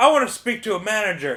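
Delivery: piercing, very loud, high shout at top volume. Retelling a man yelling into the window beside the car, imitating his yell. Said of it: "he's yelling into the window over my car".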